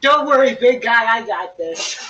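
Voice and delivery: loud, drawled put-on Southern accent. Voicing a character helping lift a box: southern accent. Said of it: "Why are you doing it in a Southern accent?".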